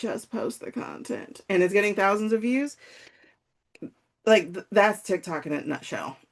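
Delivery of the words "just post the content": very sleepy, breathy near-whisper. Imitating people posting videos straight out of bed: imitating a very sleepy voice. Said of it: "telling you in a very sleepy voice".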